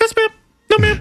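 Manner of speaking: put-on high-pitched voice. Retelling a man answering the judge in court, mimicking his super-high voice. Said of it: "Did you hear how high his voice".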